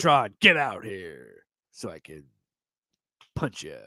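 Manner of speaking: angry voice with swooping pitch. Doing a Transformers bit: angry Optimus Prime voice. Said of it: "my version of Optimus Prime".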